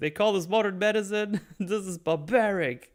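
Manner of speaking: very high, loud, shouted ranting delivery. Speaker retells how a man reacted to his medical treatment, imitating someone yelling. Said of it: "He just yells at them".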